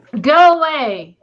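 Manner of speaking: booming, very loud, amplified-sounding bellow. A player's character casts a spell and shouts at a spider, booming loud. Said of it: "causes my voice to boom very loudly".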